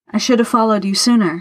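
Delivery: plain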